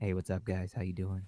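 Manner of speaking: very low, fake, sultry radio-host voice. Told he's giving a fake radio voice, showing off sultry radio voice. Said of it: "I can do sultry".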